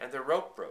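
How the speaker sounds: plain reading voice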